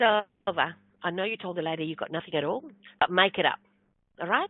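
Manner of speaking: put-on female whisper. Retelling what a lady whispered to her at her table: retelling a whisper. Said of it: "she whispers to me".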